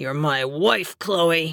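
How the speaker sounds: low, harsh snarl through the teeth. Narrator reads a husband speaking to his wife: snarled. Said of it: "he snarled".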